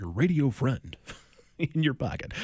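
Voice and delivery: put-on old-school classic radio announcer voice. A radio host plugging the station's stream, in an old school announcer voice. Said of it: "break out the old school announcer voice".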